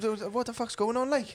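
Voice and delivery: high, slow Welsh voice.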